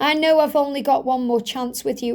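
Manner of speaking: ordinary talk, nothing marked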